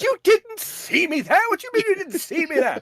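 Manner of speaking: put-on very high, loud, incredulous voice with British accent. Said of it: "John Cleese's comedy".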